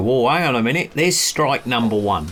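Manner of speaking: normal talking voice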